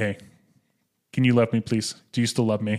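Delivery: ordinary talk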